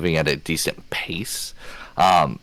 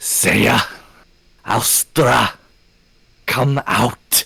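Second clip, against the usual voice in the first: shouting in a whisper; 5 semitones higher, 3 dB louder than usual. A character calls for saya and alstra to come out, in a whispered shout. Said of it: "it's like a whispered shout".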